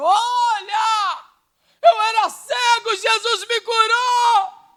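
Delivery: play-acted very high, very slow shout, olha stretched. Speaker imagining a stranger she heard from afar, imitating someone shouting. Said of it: "alguém gritando e dizendo".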